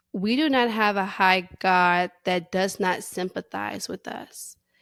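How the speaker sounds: normal talking voice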